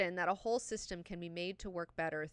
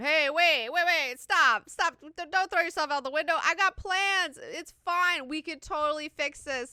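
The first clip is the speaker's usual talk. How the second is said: very loud, very high-pitched begging; 10 semitones higher, 11 dB louder than usual. Recounting a scene and voicing the Baron's lines: mock-pleading as the Baron. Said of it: "The Baron is like pleading the whole time".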